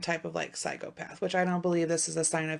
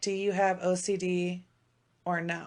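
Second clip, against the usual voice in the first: ordinary delivery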